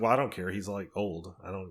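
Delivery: ordinary talk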